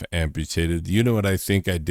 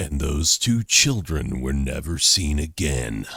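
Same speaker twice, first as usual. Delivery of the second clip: solemn, grave, very serious documentary narrator voice; 3 semitones lower than usual. Speaker imagines a man narrating over a slow zoom on a picture; very serious narrator voice. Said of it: "a man with a very serious voice is like".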